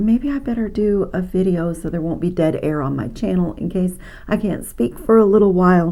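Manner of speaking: usual speaking voice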